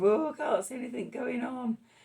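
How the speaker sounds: high, fretful, frustrated inner voice. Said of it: "that sort of".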